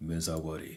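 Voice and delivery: chilly villainous voice. Voicing a manga character's line: Sephiroth voice. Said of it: "I can hear the Sephiroth voice just saying".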